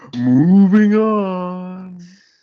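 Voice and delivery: slow, high, loud, drawn-out delivery.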